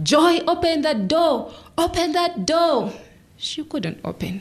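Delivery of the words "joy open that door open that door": high-pitched scream.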